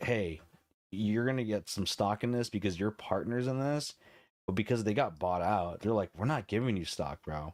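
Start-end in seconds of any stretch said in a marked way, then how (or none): none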